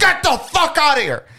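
very high-pitched, shrieking, screaming outburst. Quoting the part of the video where the other speaker starts screaming: imitating someone screaming. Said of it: "you just start screaming".

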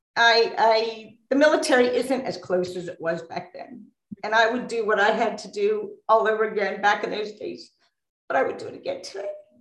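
tearful, crying through the words. Speaking to someone who calls them babe, crying while talking. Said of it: "I'm sorry, I didn't want to cry".

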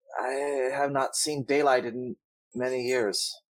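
warped, distorted woman's voice. Narrator voicing a woman calling back from the dark stairway: distorted woman's voice. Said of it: "A distorted woman's voice calls back".

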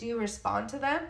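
ordinary talk

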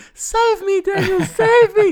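very high, very loud, pleading scream. Retelling failing to save a viburnum, voicing the tree's mock screaming plea. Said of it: "The tree was screaming at me".

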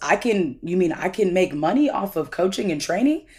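ordinary talk, nothing marked

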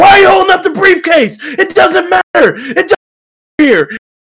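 mock, very high, shrill, frantic screaming rant. Recounting a funny moment with a briefcase, imitating Kevin Owens screaming. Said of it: "Kevin Owens just screaming".

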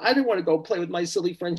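acted-out crying, girl voice. Telling of a girl dismissed by her mummy, speaker is imitating a girl crying. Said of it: "She's like crying at this point".

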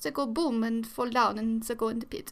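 bad, terrible, put-on German accent. Speaker describing historical executioners, acting them out: terrible German accent. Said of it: "That was my terrible German accent".

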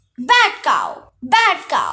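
slow, drawn-out, booming, swooping shout. Tyson slams his fists into the bronze bull's face, shouting. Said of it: "he shouted".

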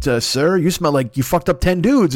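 dutiful, deferential servant voice. Joking about Batman coming home after fights: Alfred voice. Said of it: "Alfred's just like".

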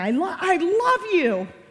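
high, loud, slow yelling. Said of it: "you're yelling".

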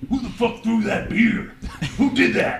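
breathy, whispered pro wrestler voice. Asked to let the others hear it, doing a Macho Man-like generic wrestler voice. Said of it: "Like a generic wrestler".

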